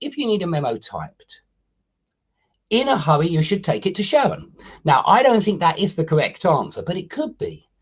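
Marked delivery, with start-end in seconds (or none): 0.0-4.5 main pause right after typed. Showing how commas function in a sentence, with the main pause after 'typed'. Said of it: "you could pause in two different places in this sentence".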